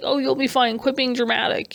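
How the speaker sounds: ordinary talk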